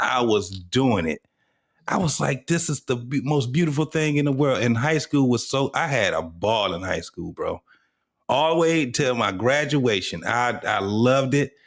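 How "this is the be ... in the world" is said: ordinary talk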